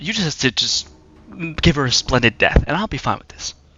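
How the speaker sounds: confiding, voiced stage whisper, spoken close. Voicing an unseen figure who holds a player close: half-whispering in someone's ear. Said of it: "just whisper in your ear".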